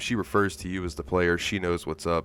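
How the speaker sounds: ordinary talk, nothing marked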